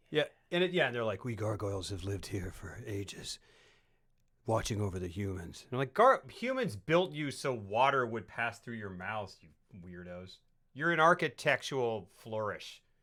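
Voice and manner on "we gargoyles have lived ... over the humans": overly grave, over-serious solemn gargoyle voice. Describing cartoon gargoyles, acting out what they say: mock over-serious gargoyle voice. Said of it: "they're like very over serious".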